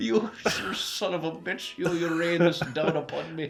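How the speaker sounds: put-on vaguely Irish accent. Speaker voices their own intestines cursing them, vaguely Irish accent. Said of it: "vaguely Irish".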